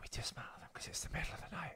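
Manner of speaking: hushed voice. Explaining that it is the middle of the night: whispering. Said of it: "Why are we whispering?".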